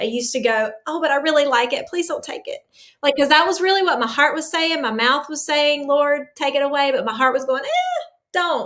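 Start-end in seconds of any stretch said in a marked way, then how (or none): 0.9-2.6 acted anxious, fearful, begging plea. Retelling how they used to pray when they first started, retelling a fearful prayer. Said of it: "I used to pray that in fear".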